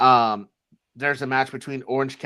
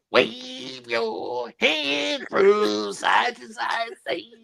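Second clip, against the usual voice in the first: put-on wrestling commentator voice, higher; 11 semitones higher than usual. Joking about a late-night impression: doing Booker T's voice. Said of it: "My fucking Booker T impression".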